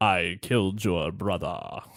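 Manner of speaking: low, slow, deliberate, taking its time. Attempting a Snape voice as Scar confessing the killing: attempted Snape impression. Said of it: "I can't do that impression either".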